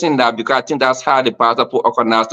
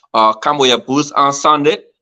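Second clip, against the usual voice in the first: usual speaking voice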